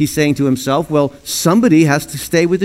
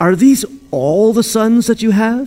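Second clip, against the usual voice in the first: fed-up, exasperated, pitched-up tone; 7 semitones higher than usual. Acting out a question to a father about his sons, exasperated. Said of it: "You can almost hear the exasperation in his voice".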